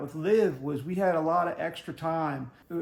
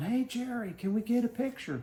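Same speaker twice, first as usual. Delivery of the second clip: mock high-pitched calling-out yell; 6 semitones higher, 3 dB quieter than usual. Retelling how someone in their group yelled to an announcer in a golf cart: retelling a yell. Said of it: "And Kristen yelled".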